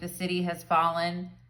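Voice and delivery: ordinary talk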